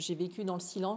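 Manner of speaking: ordinary talk, nothing marked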